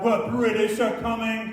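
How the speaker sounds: ordinary talk, nothing marked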